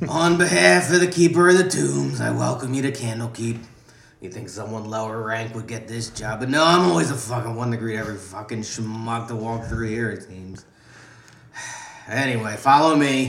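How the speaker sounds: loud voice of a heavy lifelong smoker. Voicing the NPC May at the front of Candlekeep, May's heavy-smoker voice. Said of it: "Heavy smoker".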